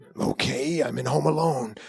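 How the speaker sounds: put-on little-kid voice. Retelling being told to do it differently, answering with a Macaulay Culkin impression. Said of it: "like Macaulay Culkin".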